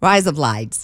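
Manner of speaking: quick Australian accent. Teaching listeners to say a phrase, a speaker demonstrates a quick Australian accent. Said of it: "But you're saying it quick".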